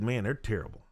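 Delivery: ordinary talk, nothing marked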